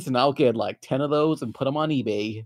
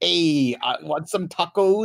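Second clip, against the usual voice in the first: put-on Mexican accent, drawn out, played as character; 3 semitones higher than usual. Joking with co-hosts about playing characters, pretending to be Mexican in mock Mexican accent. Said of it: "if I pretend to be Mexican".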